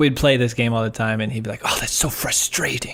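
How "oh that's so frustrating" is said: put-on British accent, slower. Retelling what a former roommate would say during a game, in a put-on British accent. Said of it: "you sounded just like my old British roommate".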